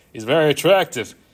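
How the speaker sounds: very loud, booming cartoon penguin voice. Trying to do the Skipper voice for the others: Skipper voice. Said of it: "I'm trying to do the Skipper voice".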